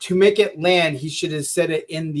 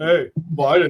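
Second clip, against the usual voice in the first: put-on deeper voice with added bass. Retelling what someone else said: deeper voice imitating a friend. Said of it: "you just put some bass in your voice and sounded like me".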